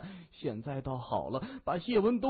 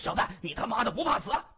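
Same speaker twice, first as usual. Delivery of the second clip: puffed-up, blustering, pitched-up tough bravado; 5 semitones higher than usual. A bald man confronts Xie Wendong, blustering. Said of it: "装腔作势的说".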